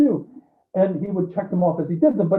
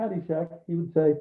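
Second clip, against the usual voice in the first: normal talking voice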